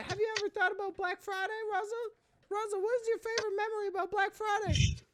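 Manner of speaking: squeaky, very high, loud cartoon voice. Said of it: "I'm supposed to do this one in a Mickey Mouse voice".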